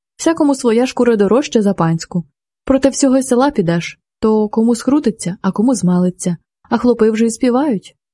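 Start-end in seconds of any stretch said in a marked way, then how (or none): none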